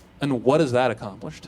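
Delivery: mimicked, completely flat deadpan delivery. Retelling a reply to someone complaining about a thirty-minute wait, retelling a deadpan reply. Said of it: "Completely deadpan".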